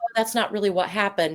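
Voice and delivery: ordinary talk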